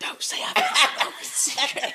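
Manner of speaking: loud stage whisper, right at the mic. Teasing a co-host about a habit: imitating someone's loud whisper. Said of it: "you get right above the mic, and you go".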